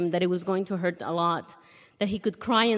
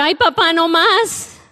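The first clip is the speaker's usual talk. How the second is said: put-on high, drawn-out, pleading kid's yell of pain; 10 semitones higher, 10 dB louder than usual. Retelling how a kid cried out as his tooth was pulled, retelling a kid's yell. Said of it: "he yelled out".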